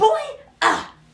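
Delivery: put-on loud, high, shrill, angry, huffy toddler outburst. Telling how a two-year-old stormed out onto the deck, imitating huffy, pissed-off toddler. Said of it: "she's all huffy puffy and pissed off".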